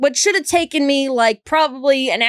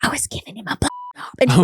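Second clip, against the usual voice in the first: hushed whisper, breaking off mid-word; 2 semitones lower than usual. Retelling what a woman said on the couch after dinner, in a retold whisper. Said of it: "She whispers this".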